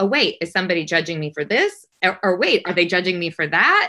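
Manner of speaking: plain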